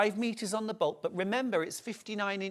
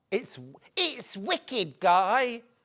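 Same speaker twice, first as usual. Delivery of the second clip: fake Cockney accent, higher; 3 semitones higher than usual. Performing a line as if for a show reel: put-on Cockney accent. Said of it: "doing a, uh, Cockney accent".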